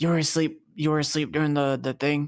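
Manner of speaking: soft, slight, hushed whisper. Walking over to a companion who slept through it; whispering a little. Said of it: "kind of whisper to him a little bit".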